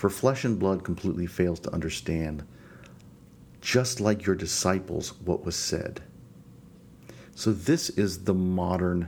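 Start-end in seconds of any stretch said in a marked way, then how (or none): none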